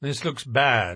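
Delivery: plain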